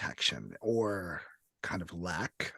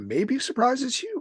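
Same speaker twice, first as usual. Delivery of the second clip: voice breaking up, very high-pitched; 5 dB louder than usual. Describing a scene to another player, with the voice cracking. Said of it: "why did my voice crack?".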